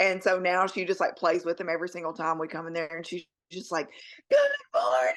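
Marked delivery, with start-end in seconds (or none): 4.3-5.1 booming, very high, loud put-on voice. Retelling a worker greeting the son: imitating someone greeting loudly. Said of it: "she says it really loud to him".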